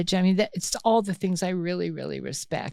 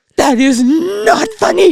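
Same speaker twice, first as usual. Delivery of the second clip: shrill, loud, drawn-out scolding tone, suppressing laughter; 11 semitones higher, 15 dB louder than usual. Retelling scolding a child while fighting back laughter. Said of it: "And I'm laughing".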